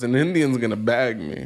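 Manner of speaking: ordinary delivery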